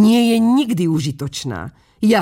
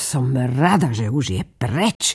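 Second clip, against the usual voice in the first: muttering under breath, much lower pitch; 5 semitones lower than usual. Once the duck has swum away, the rocket speaks alone, muttered to herself. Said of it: "zamrmlala si pre seba".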